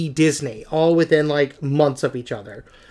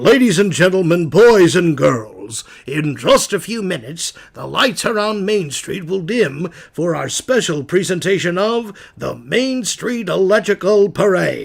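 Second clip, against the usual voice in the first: theme park announcer voice, as over loudspeakers. Explaining who Disneyland's announcer was: Jack Wagner's Disneyland announcer voice. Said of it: "he was the voice of Disneyland".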